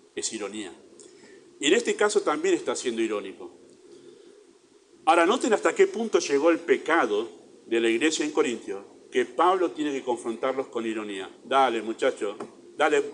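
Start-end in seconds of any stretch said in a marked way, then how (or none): none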